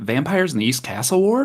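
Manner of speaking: half-whispered under the breath. As two figures notice the party, a player's character quickly half-whispers, quick half-whisper under breath. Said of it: "I just quickly whisper under my breath".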